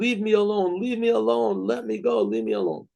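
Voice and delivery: put-on scream. Retelling how a man at a meal screamed at a picture: imitating someone screaming. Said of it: "he started screaming".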